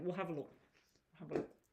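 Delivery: speaking with mouth full while eating. Starting to look at a viewer's questions, talking with mouth full. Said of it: "I'm talking with my mouth full".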